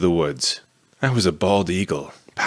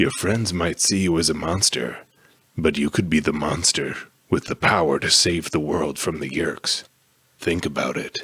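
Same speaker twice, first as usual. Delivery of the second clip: rumbling, tempting godlike voice; 3 semitones lower than usual. Narrating a story, voicing Krayak making an offer to the narrator, in Krayak's rumbling voice. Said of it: "making the whole world around me tremble. / he continued".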